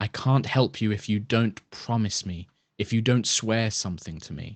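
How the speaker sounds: whispered voice. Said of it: "You hear this voice just whispering in your mind".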